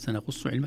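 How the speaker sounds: ordinary talk, nothing marked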